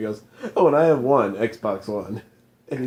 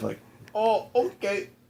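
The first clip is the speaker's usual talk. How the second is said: put-on British accent, much higher; 9 semitones higher, 5 dB quieter than usual. Showing someone how to say it more British, in a British accent. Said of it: "You didn't say it British enough".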